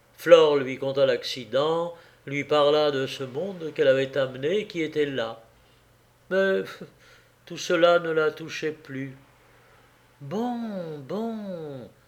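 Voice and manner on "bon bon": tired, faint, worn-down, hushed, "bon" drawn out. A woman, told of an accident, repeats herself in a weary voice. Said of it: "répéta-t-elle de la même voix lasse".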